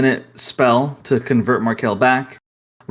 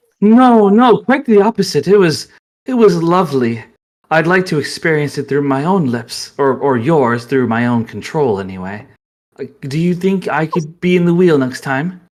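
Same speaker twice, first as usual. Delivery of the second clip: put-on female character voice, higher; 3 semitones higher, 3 dB louder than usual. Voicing Madame Rogel asking Ravelin for a favor: Madame Rogel voice. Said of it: "you suddenly hear Madame Rogel's voice".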